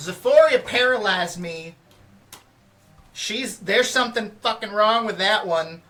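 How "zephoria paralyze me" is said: loud shouted yell. In a game, the player calls out to Zephoria, yelling. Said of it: "I'm gonna yell".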